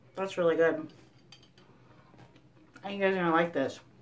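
speaking while chewing, mouth full. Tasting the shrimp dish for you guys, talking while chewing. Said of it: "Pardon me as I keep chewing".

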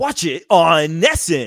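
loud, slow, drawn-out, swooping, fully hyped ad delivery. Imitating a hockey player's ad line: Marchand really getting into it. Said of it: "really gets into it".

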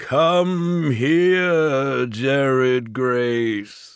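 thundering, booming ogre voice, drawn out. The ogre, holding two children, calls out to the boy; booming deep voice. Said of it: "Mulgrath's voice boomed, far deeper than their father's".

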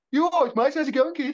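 Birmingham accent. Greeting a co-host at the start of a recording, in a Brummie accent. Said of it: "the Americans won't understand a Brummie accent".

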